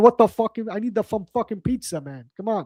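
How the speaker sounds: put-on New York-accented speech. Retelling how he talks around another New Yorker, in a New York accent. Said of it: "my New York accent".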